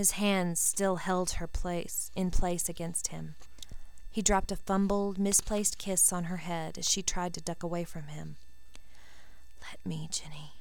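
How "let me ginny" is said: whispering, lower and quieter. Narrator reads a man's line to ginny as he holds her: whispered. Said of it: "he whispered".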